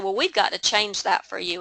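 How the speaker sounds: ordinary delivery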